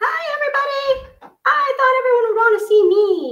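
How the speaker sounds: very high, squeaky pet dog voice. Speaking for the family dog, greeting everybody; squeaky voice as Teddy the dog. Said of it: "she talks in a squeaky voice like this".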